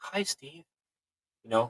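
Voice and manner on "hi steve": faint, soft whisper. Retelling what an entity said into an ear: imitating a whisper. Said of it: "kind of in a whisper".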